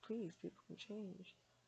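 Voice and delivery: ordinary delivery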